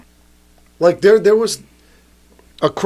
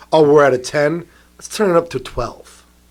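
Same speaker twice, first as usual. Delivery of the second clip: usual speaking voice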